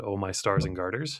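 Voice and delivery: ordinary talk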